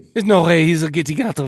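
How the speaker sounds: attempted put-on French accent. Voicing what the characters are thinking, in an attempted French accent. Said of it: "I'm working on my French accent".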